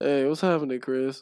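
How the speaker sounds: put-on flat, listless, low-energy voice. Retelling a coworker's greeting while walking together, mimicking a low-energy greeting. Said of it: "he said it like with low ass energy".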